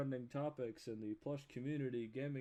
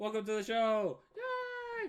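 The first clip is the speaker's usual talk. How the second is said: pitch rises high and swings around; 10 semitones higher, 7 dB louder than usual. Welcoming a guest onto the show in a Kermit impression. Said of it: "That was my Kermit impression".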